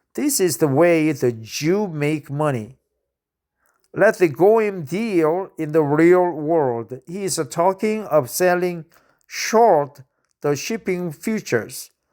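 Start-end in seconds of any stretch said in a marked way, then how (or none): none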